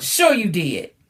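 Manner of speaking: irritated, angry, scornful, sarcastic disbelief. Explaining kinds of sarcasm, giving an example: angry sarcastic tone. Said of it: "And sometimes it can be angry".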